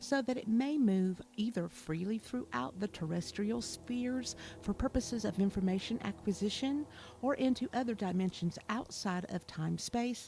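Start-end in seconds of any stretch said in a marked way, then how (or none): none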